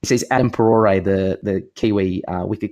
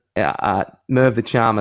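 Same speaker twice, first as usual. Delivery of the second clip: ordinary delivery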